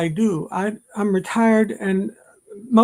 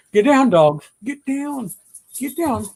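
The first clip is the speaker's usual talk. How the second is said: slow, insistent scolding; 4 semitones higher than usual. Telling dogs to get down: yelling at dogs. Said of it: "I didn't mean to yell".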